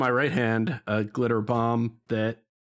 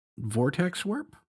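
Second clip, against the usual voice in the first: usual speaking voice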